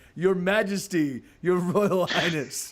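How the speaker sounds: words broken up, laughing through them. A storyteller voices a character addressing the listeners as royalty, laughing while talking. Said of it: "starts laughing".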